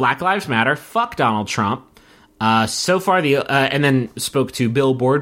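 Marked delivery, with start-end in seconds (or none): none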